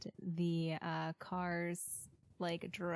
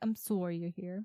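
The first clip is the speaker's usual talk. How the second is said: fake, mock Canadian accent. Joking about going to Canada, the speaker puts on a mock Canadian accent. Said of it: "like if we go to Canada".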